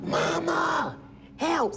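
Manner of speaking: very high, rasping, creaky, rough pleading voice. Retelling a daughter's phone call for help: imitating Tashira screaming. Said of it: "So my baby's screaming".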